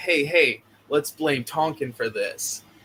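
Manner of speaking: plain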